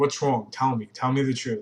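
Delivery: plain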